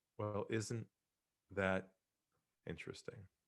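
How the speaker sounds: hushed, brought-down voice. Speaker recounts answering a man who was pressuring him, retelling in a lowered voice. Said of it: "I lowered my voice and I said".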